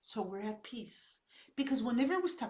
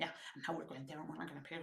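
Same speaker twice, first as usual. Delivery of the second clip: very hushed, low, fast, grumpy under-the-breath muttering; 9 semitones lower, 12 dB quieter than usual. Retelling what a grumpy woman said while driving, imitating muttering under breath. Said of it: "she was swearing under her breath".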